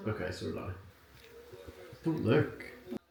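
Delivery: talking through giggles, giggly laughter. Telling the other player you folded yours too, giggling while talking. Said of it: "Why are you giggling?".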